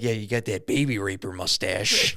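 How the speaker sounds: growled, hostile tone. Retelling a man insulting a security guard: imitating someone growling at people. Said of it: "growls at people like that".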